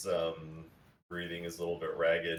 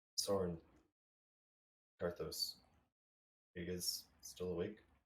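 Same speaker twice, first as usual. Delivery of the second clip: soft, quiet, hushed voice; 9 dB quieter than usual. Voicing a character awake at night beside a resting stranger: talking quietly. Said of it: "talking quietly".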